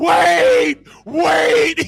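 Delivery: loud, high-pitched put-on scream. Telling how a man running behind them screamed for them to wait; retelling his high scream. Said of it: "And he's screaming".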